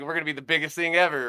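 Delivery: ordinary talk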